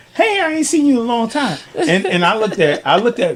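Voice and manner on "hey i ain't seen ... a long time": very high-pitched voice. Retelling a family reunion, imitating a cousin's voice. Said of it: "You sound like his voice".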